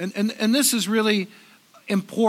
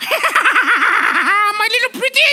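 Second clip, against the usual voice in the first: high, shrill voice, pushed out forcefully; 12 semitones higher, 7 dB louder than usual. Talking to an audience about The Wizard of Oz: Wicked Witch of the West voice. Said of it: "the Wicked Witch of the West".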